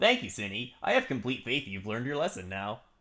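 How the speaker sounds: animated character voice with pitch swooping freely around. Reading a text message aloud: Sonic voice. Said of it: "back to the Sonic voice".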